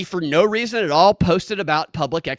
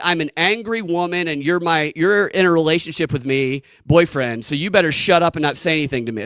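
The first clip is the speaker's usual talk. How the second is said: ordinary delivery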